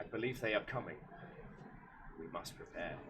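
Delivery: hushed, breathy whisper, fully committed. Speaking in character to Beetle about a coming threat: full Obi-Wan voice. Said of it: "full Obi-Wan voice".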